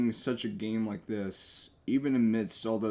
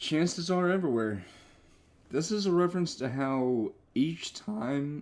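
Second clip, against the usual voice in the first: pitched-up, cracking voice breaking with emotion; 6 semitones higher than usual. Speaker commenting on a game as emotions get the best of them, voice cracking. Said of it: "It's almost like my emotions are trying to get the best of me again".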